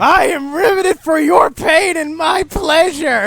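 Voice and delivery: excited, thrilled voice. Watching a game scene with others and commenting on it, excited. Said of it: "I'm just excited right now".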